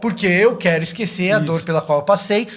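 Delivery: plain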